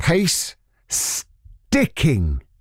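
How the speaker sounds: slow delivery. Radio presenter repeats a term for listeners, said slowly. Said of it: "let me say that slowly".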